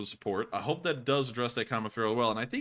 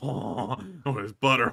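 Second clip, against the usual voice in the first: mock deranged, unhinged-sounding voice; 4 dB louder than usual. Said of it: "You're like".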